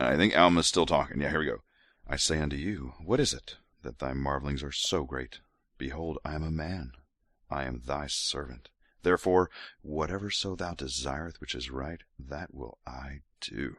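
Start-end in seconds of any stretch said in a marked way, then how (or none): 2.1-13.8 soft, sultry, seductive sexy voice. Reading a scripture scene aloud, the reader voices a speaking character in mock sexy voice. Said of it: "I'm going to keep doing sexy voice".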